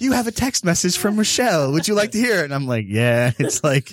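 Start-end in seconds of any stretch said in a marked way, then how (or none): 0.0-2.4 put-on prim proper English accent, quick and high. Imitating her talking car announcing a text message, proper English accent. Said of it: "she says it in like an English accent".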